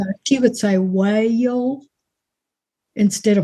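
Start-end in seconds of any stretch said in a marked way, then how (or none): 0.8-1.8 put-on drawl, stretched across three syllables. Imitating how a relative stretches one syllable into three: Aunt Pat's drawl. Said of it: "And they drawl it out".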